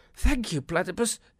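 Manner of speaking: very loud, high spluttering. A young wombat just pulled out of the water thanks his rescuer, spluttering. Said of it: "he spluttered".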